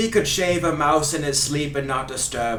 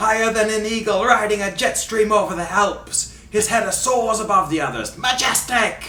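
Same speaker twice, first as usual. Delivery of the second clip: high, fake Scottish commentator accent. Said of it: "through my fake Scottish accent".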